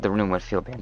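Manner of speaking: soft voice that cracks partway through. Explaining a room's design, voice cracking. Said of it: "Voice crack".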